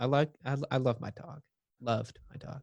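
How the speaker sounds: soft, teary voice, close to crying. Talking with others about a keepsake from a girlfriend, tearing up. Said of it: "I'm tearing up".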